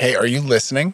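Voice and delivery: plain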